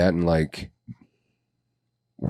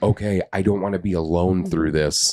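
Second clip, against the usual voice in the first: plain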